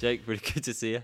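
talking through laughter. Greeting Jake before recording the podcast, laughing while talking. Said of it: "Why are you laughing?".

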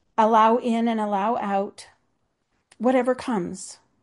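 choked up, voice catching, emotion rising. Speaking about a spiritual breathing practice, getting choked up. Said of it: "I'm getting choked up".

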